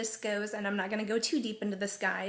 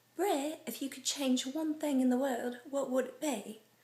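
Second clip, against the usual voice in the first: put-on non-American accent, pitched up; 5 semitones higher than usual. Reading out a Twitter friend's question in her accent: imitating Sarah's accent. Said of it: "I love the accent so much".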